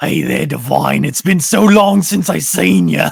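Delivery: gruff, creaky, loud, rough orc brute voice. Mocking how someone's accent shifts across episodes: orky voice. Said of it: "it got so orky".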